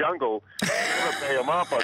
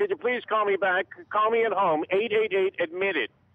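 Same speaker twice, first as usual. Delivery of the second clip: put-on little old lady voice, higher pitch; 6 semitones higher than usual.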